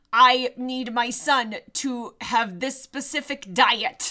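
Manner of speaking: put-on, over-enunciated delivery. Imitating an actor who played the Viking: imitating an actor's over-enunciated delivery. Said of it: "And over enunciating every".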